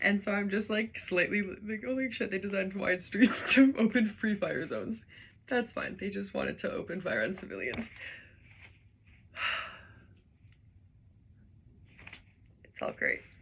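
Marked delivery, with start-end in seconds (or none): 5.5-13.2 whispered, mock-approving sarcasm. Reacting to an article they are reading for the first time, sarcastic. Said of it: "when I say it's all great, I mean that sarcastically".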